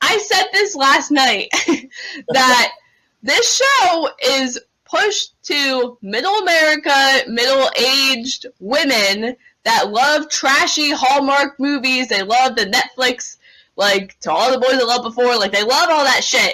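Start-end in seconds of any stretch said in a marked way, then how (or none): 0.0-12.1 heated, impassioned, drawn-out insistent delivery. Arguing with another speaker about how a show is marketed: yelling. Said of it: "I'm sorry that I'm yelling".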